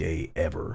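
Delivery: plain reading voice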